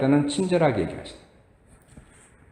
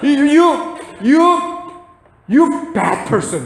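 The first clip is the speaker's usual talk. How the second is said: mock cursing outburst. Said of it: "욕까지 나왔어".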